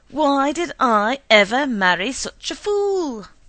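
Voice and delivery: top-of-the-lungs, roaring, very loud bellow. A husband roars at his wife at the top of his lungs. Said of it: "He roared at the top of his lungs".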